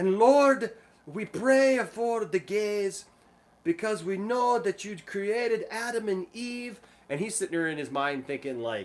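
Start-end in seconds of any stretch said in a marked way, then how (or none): 0.0-6.8 put-on European accent, high and slow. Retelling an old lady's prayer at a gathering, imitating her European accent. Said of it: "this accent".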